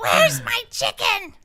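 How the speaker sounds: very high, loud put-on puppet voice. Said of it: "There, that's it".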